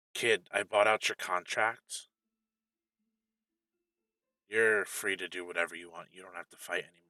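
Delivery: soft, quiet half-whisper under the breath. Narrator voicing a woman half-whispering to the player's character. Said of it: "she whispers to you".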